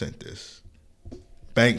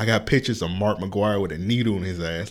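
normal talking voice

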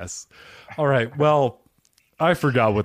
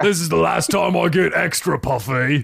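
rough, raspy, pitched-up pirate voice; 7 semitones higher, 3 dB louder than usual. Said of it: "You sound like one of the pirates".

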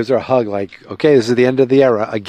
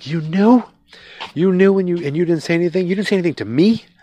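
put-on furious, accusing tone, pitched up; 7 semitones higher than usual. Retelling a scene where she learns he knew: imitating her angry retort. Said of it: "And she's pissed".

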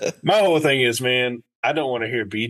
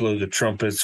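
ordinary delivery

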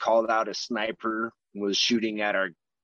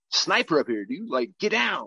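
high yell with swinging pitch; 5 semitones higher than usual. Retelling pulling someone down and yelling at him, retelling a yell. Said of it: "we're like pretty much yelling at him like".

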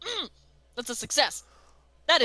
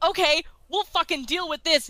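usual speaking voice

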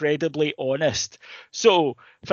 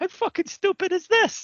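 mock laughing outburst, much higher. Describing a man mocking the movie throughout, imitating his laughing outburst. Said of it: "bursts out laughing and goes".

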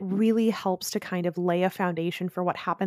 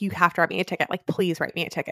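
put-on desperate begging, faster pace. Recapping a scene, the speaker acts out her begging the sheriff, retelling desperate begging. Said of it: "she's begging the sheriff".

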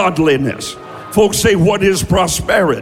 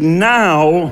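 the word "now" strongly stressed; 2 semitones lower than usual. Teaching a group the right emphasis, having them repeat: stress on 'now'. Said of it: "we always get the emphasis on the wrong syllable".

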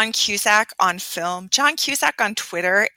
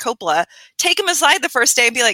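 ordinary talk, nothing marked

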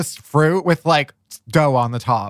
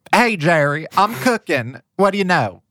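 laid-on put-on Southern accent. Reading a script aloud in a group, playing Reba in a put-on accent. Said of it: "maybe you should read that in the accent".

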